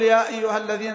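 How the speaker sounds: normal talking voice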